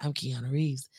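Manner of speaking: put-on raspy voice. Quoting a Robot Chicken bit: Keanu Reeves impression. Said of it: "I could do it now 'cause I have a raspy voice".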